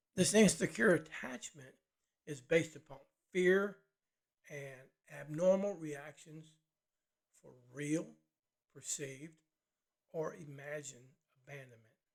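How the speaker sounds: drawn-out, slow, loud and deliberate delivery. Explaining a definition so listeners can follow it: speaking slowly. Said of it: "I said that slow so you could kinda get it".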